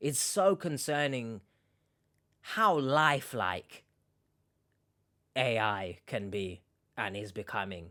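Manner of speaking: slow, choked, fighting back tears. Reacting after reading troubling chat messages aloud, holding back tears. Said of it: "not get choked up".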